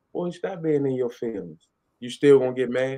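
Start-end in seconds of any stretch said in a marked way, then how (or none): 0.1-1.7 easy, relaxed, sexy voice. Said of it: "Beyonce's easy, sexy voice, she says".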